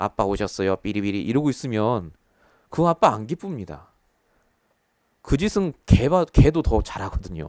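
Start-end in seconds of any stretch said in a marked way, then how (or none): 0.0-1.2 put-on flat emotionless robot voice, much lower, quieter. Speaker acting out a child greeting their father, put-on flat emotionless robot voice. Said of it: "로봇이에요. 굉장히 감정 없이".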